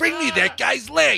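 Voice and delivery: very high-pitched, raspy voice. Speaker pretends his own hand is talking, Rocket Raccoon voice. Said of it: "all of a sudden I'm Rocket Raccoon".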